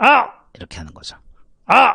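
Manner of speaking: high gritty shout.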